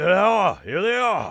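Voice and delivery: monster voice shouting, very high and very loud. A game master voices a bugbear in combat, shouting. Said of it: "the bugbear shouts".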